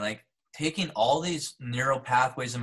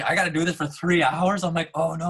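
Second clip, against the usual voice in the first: acted-out panic, louder; 5 semitones higher, 6 dB louder than usual. Retelling feeling unwell forty minutes in, with hours still to go: retelling your panic. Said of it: "I'm panicking".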